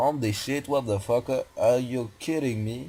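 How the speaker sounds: put-on American accent in English. Retelling their character stopping dead at the map's limit: American accent. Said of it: "j'ai un accent américain complètement parfait".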